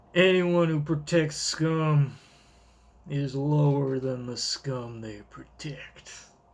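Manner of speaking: Western cowboy voice, drawing out "scum". Reading a chapter aloud, voicing a character in a cowboy voice. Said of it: "I'm giving him a cowboy voice".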